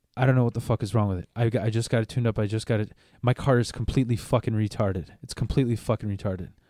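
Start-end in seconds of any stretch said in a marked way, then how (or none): none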